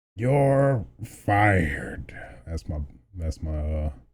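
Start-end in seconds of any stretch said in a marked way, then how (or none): 0.2-2.2 wrestling-boss announcer-style delivery. Joking about someone getting fired, doing a Vince McMahon impression. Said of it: "my Vince McMahon impression".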